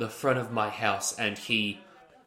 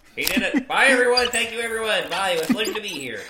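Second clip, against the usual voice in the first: very high, loud puppet character voice; 10 semitones higher, 6 dB louder than usual. Saying goodbye to everyone after testifying as a witness: Kermit the Frog voice. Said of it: "classic Kermit".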